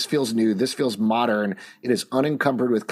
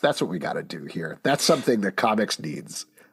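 low, sarcastic tone of fake agreement; 4 semitones lower than usual. Mocking a comics publisher's strategy for its readers, sarcastic. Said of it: "I'm being sarcastic".

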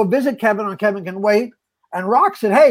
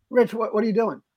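ordinary talk

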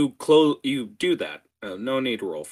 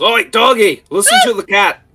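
gruff put-on character voice; 13 semitones higher, 11 dB louder than usual. Voicing a character who grabs a kobold by the scruff: in character as Velket. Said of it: "grabs you by the scruff and goes".

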